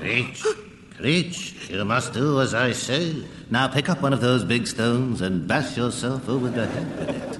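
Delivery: eerie, strange, disembodied voice. A voice calls creech's name in a drama scene; strange disembodied voice. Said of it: "strange disembodied voice calling my name".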